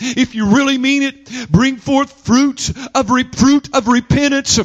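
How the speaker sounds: ordinary delivery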